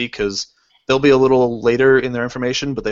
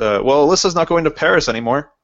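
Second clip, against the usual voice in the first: mock kidding, half-teasing, offhand joking tone; 4 semitones higher than usual. Retelling what the speaker's mom jokingly said; retelling a joking remark. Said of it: "kind of jokingly and goes".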